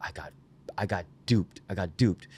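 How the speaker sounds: grumbling, complaining delivery. Retelling how the DP complained on set: imitating Matt muttering under his breath. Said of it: "muttering under his breath".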